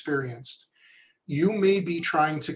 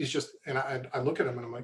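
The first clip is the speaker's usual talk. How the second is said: plain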